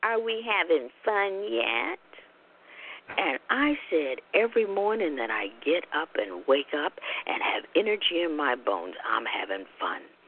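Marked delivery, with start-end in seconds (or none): 0.0-2.0 put-on sneering, snide, sarcastic tone. Retelling what a woman sitting next to the speaker said, imitating a snide remark. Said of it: "she snidely said to me".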